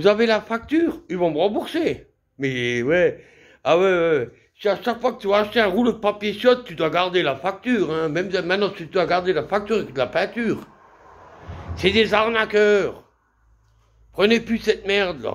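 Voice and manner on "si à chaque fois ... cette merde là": fed-up, fuming, heated, angry rant. Speaker vents to listeners just before cutting off: angry rant. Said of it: "Je suis énervé".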